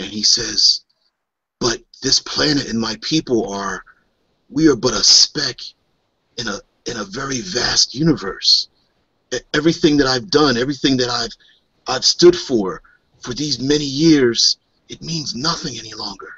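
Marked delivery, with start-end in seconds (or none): 1.6-16.3 low, quiet whisper. Voicing a spiritual leader confiding to one player: low whisper. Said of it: "he says in a low whisper".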